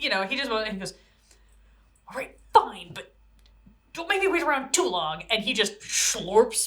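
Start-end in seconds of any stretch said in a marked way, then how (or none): 2.1-5.2 grumpy grumble, sour and swooping. Voicing a character agreeing to wait, in grumpy muttering. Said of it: "very grumpily mutters".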